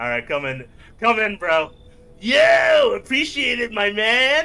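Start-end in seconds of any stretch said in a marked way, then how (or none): 2.2-4.5 put-on stoner voice, much higher and slower. Voicing the stoner who was just let in, in a stoner voice. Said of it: "I get to do like the stoner voice longer".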